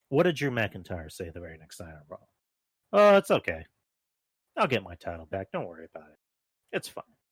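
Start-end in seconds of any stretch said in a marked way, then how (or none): 2.9-7.0 put-on loud, sing-song, dispassionate, unbothered tone. Retelling what a wrestler said after losing: imitating someone unpassionate. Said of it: "at least pretend to sound passionate".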